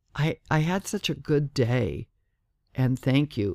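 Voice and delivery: ordinary talk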